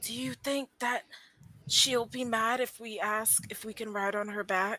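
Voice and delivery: whispered aside. A player's character quietly asks two companions a question: whispering to companions. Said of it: "Yotua whispers to Zenris and Diney and goes".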